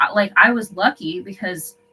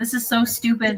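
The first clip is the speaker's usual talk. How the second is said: put-on scream, higher; 4 semitones higher than usual. Retelling a CPS worker screaming at her supervisor: imitating someone screaming. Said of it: "screaming at her supervisor".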